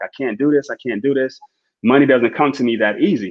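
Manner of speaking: put-on crying, tearful pleading tone. Retelling a trader's phone call after losing money: imitating someone crying. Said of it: "she called me crying, like".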